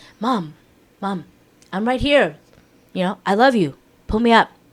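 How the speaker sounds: unruffled, calm, cutesy, sweet delivery. Describing a scene, the speaker quotes him calling to his mom from a cliff: imitating a calm plea. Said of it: "He's over here all calm".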